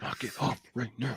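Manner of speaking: angry, hushed, very quiet whisper. Playing the parent in a Disney-style scene, in a whisper voice: whispered. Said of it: "with the whisper voice".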